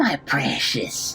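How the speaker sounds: creature character voice. Speaker recalls playing Gollum from a script, doing the Gollum voice. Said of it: "playing the part of Gollum because I wanted to do the voice".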